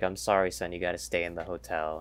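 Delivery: plain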